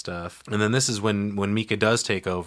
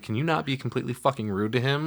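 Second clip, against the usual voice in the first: mock angry, pitched-up, scolding tone; 5 semitones higher, 3 dB quieter than usual. Retelling how she snapped at Mika after the psychic left: imitating someone scolding. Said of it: "And she's like".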